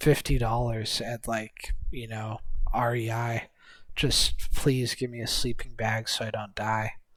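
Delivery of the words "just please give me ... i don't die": acted tearful, pleading voice, quieter. Retelling begging for a sleeping bag while out in the cold: retelling own tearful begging. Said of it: "begging and crying".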